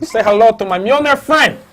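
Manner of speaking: bad mock gangster impression, high, loud growl.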